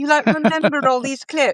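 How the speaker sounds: bad put-on British accent. Retelling what a british colleague once said: bad british accent. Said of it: "It's my bad British accent".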